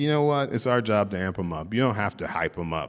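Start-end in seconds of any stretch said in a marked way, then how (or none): none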